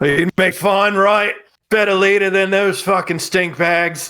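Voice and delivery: in-character fantasy orc voice, called out. A player calls out from the doorway in character, in an orc voice. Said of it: "were you trying to do an orc impression?".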